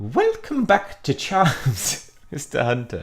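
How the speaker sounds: high, squeaky professor voice, sing-song, swooping up and down. Acting out a Charms class scene, greeting Mister Hunter in Professor Flitwick voice. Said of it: "Let's do this".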